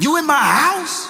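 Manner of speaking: threatening, menacing demanding tone, pitched way up. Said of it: "Bass in voice, ready to beat somebody down".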